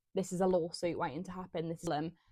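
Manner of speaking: normal talking voice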